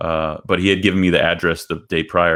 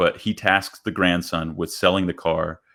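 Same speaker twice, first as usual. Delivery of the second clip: ordinary delivery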